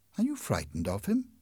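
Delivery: ordinary delivery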